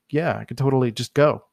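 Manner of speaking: plain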